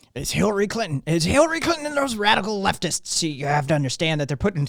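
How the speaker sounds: rough, straining delivery. Answering a request to do Alex Jones: Alex Jones impression. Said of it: "now do Alex Jones".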